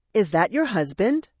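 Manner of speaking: usual speaking voice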